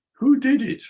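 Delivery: disapproving, scornful, sky-high judging tone. Showing how tone can turn a hairdo question into criticism: disapproving question. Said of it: "depending on my tone of voice, it could mean, what a terrible hairdo you just had".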